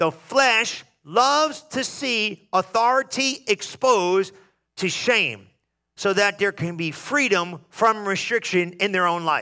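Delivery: slow, deliberate, word-by-word reading aloud. After telling listeners to write it down, reading the statement slowly. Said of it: "I'm going to read it slow".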